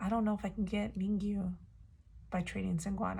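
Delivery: plain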